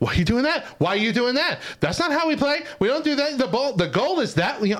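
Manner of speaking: put-on very high, shrieking, screaming yell. Describing parents at kids' Saturday games, retelling parents screaming. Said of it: "just like and screaming".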